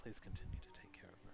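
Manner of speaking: whispered voice. A character leans in close to the listener and says this in a whisper. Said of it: "as he kind of whispers it into your ear".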